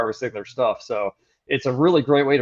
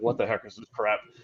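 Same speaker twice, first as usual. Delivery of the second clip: put-on under-breath mutter, much quieter; 2 semitones lower, 7 dB quieter than usual. Telling of an old man who came over to the sample table, retelling an under-breath mutter. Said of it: "he literally under his breath was like".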